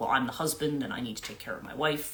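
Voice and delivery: ordinary talk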